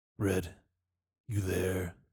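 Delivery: soft-spoken. Podcaster voicing a warrior entering a room in an imagined comic, softly. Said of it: "He says softly".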